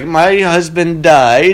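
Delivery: put-on Eastern European accent gradually slipping in. Imitating a woman talking about her late husband, the speaker slips into: accidental Borat-like accent. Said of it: "I don't know why I sound like Borat".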